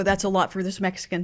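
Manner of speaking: normal talking voice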